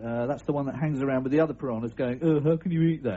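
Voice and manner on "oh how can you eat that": acted-out, sanctimonious, self-righteous, disapproving voice. Voicing a vegetarian fish talking to the other piranhas, mock self-righteous fish voice. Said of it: "in a really self-righteous voice".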